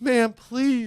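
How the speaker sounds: mock, very loud, high, tearful crying wail. Retelling begging the lady for a new room card: imitating own crying plea. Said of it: "I'm crying".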